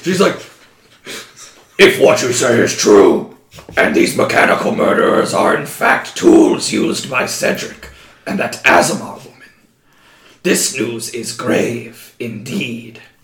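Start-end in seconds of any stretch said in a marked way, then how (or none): 1.8-13.0 low, dark, growling superhero voice.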